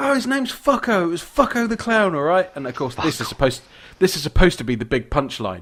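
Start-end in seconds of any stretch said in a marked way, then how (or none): 0.0-2.5 mock angry outburst, shrill, pitched very high. Retelling a film scene where a girlfriend comes in: imitating an angry girlfriend. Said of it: "gets all angry".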